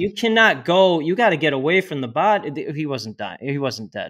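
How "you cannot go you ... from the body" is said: play-acted, loud, high-pitched shouted yelling. Retelling telling staring people to get away: retelling own yell. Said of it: "I'm yelling at the people".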